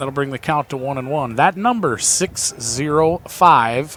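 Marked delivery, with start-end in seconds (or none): 2.0-4.0 slow, deliberate reading, paced like dictation. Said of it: "I'll say it slow".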